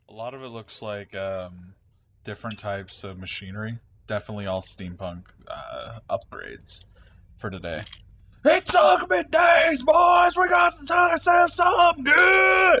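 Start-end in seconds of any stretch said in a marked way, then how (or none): 8.5-12.8 very high, loud, slow barker-style yelling. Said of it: "As he just starts yelling".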